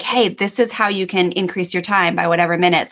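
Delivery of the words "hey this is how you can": plain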